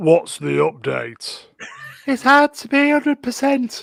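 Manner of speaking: very high, very loud put-on woman's voice. Told to voice both parts, taking the female role: higher-pitched female voice. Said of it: "do the higher pitch female voice".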